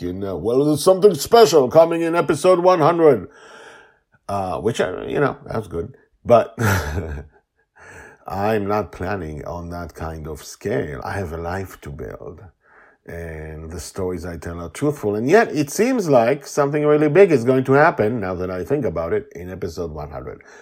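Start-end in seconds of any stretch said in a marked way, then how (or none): 0.4-3.3 high, loud dramatic announcer teaser voice. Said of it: "if this was a comic book".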